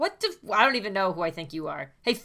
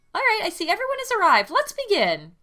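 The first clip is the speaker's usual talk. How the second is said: put-on very high, weird stuffed-animal voice; 11 semitones higher than usual. Monokuma, heard from behind the teacher's desk, greeting everyone, weird Monokuma voice. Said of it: "Does Monokuma have a weird fucking voice".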